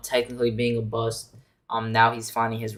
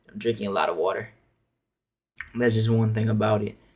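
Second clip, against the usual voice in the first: low, sore-sounding voice. Speaker whose voice hurts from yesterday's screaming; talking a little low. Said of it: "that's why I'm talking a little low".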